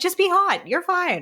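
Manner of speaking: high, breezy, reassuring tone.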